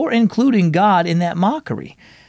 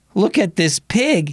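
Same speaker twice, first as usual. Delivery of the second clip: speaking through laughter; 3 semitones higher than usual. Jacob mocks Eloise's drawing, laughing. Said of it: "he pointed and laughed".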